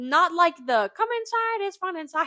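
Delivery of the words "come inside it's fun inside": very high-pitched, loud cartoon voice. Describing a pin collection to another speaker: Mickey Mouse voice. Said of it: "That was a great Mickey impression".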